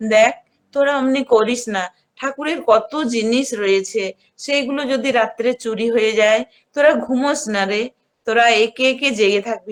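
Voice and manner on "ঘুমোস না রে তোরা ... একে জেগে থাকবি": normal talking voice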